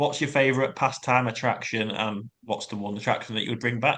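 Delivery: ordinary delivery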